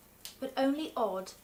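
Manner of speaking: ordinary delivery, nothing marked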